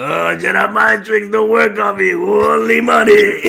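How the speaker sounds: rough, creaky character voice. Performing a requested impression in an imagined meeting: Watto voice. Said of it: "You gotta give us a Watto impression".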